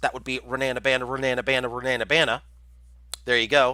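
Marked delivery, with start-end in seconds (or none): 0.0-2.4 put-on Texan accent. Asked to say a name three times fast, doing it in a Texan accent. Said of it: "in my Texan accent".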